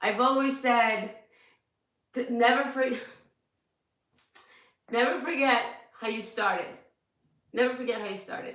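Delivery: crying, tearful speech. A speaker overwhelmed by messages talks to followers, crying while talking. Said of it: "I'm crying".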